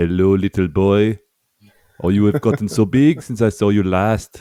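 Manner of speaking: put-on French accent on English words. Admitting weak French, speaking English with a put-on French accent. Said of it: "speaking English but with a French accent".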